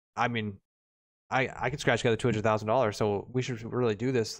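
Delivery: ordinary delivery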